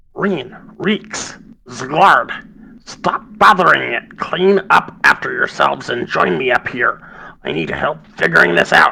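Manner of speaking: small, loud, high gnome voice, calling out. The game master voices someone calling from upstairs in Gnomish: small voice talking loudly. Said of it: "a small voice, kind of loudly talking".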